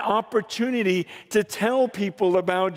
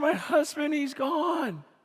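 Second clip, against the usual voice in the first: mock sobbing, higher and quieter; 6 semitones higher, 5 dB quieter than usual. Retelling how a wife spoke after the funeral, imitating someone sobbing. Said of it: "she's just sobbing".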